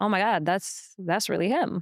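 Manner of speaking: plain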